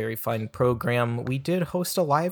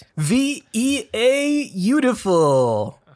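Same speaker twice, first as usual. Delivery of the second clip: very high, loud, drawn-out cry; 11 semitones higher, 8 dB louder than usual. Doing a just-invented impression: Jim Carrey as Viewtiful Joe. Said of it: "if Jim Carrey was Viewtiful Joe".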